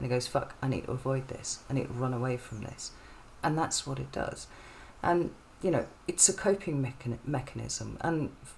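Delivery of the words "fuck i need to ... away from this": usual speaking voice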